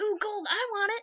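greedy, gold-lusting voice.

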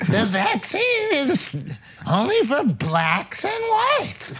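high-pitched, drawn-out, swooping voice. Doing an impression of RFK after the others ask for it. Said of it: "now do R F K".

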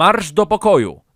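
very loud, high-pitched, forceful shout. A father answers his son's outburst, shouting. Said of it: "Krzyknął tata".

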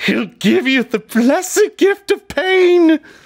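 very high, loud shrieking monster voice. Game master voicing an attacking enemy to a player, screaming. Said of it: "He screams".

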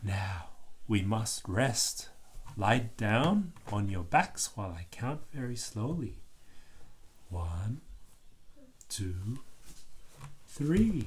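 soft, hushed whisper. A narrator reads Miss Rabbit's words to the children, in a soft whisper. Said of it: "lowers her voice and whispers softly".

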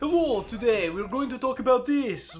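put-on loud, high Russian Eastern European accent. Imitating how he used to address the class: russian eastern european accent. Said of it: "like Russian, Eastern accent".

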